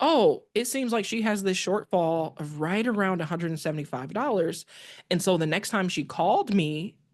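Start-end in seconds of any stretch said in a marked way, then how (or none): none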